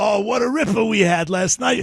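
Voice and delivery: rough Boston voice. Retelling how the speaker's buddies from Boston talked over the weekend, in rough voices. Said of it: "they all have the rough voices".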